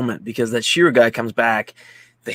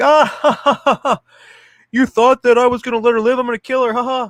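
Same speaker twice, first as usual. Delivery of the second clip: mock, very high, loud, shrill maniacal anime villain cackle; 13 semitones higher, 5 dB louder than usual. Recounting an anime scene, one guy taunting another: retelling crazy anime laughter. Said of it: "crazy anime manga laughter".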